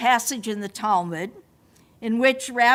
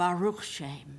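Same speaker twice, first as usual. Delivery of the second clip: weak, faint, barely audible half-whisper; 6 semitones lower, 9 dB quieter than usual. Retelling how weak Jacob answered: imitating a weak half-whisper. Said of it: "weak as he was, whispered".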